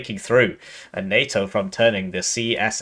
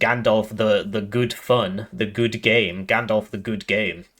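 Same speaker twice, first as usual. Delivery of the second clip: normal talking voice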